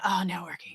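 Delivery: whispered, shrinking, recoiling dread. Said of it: "they would shrink and make that noise".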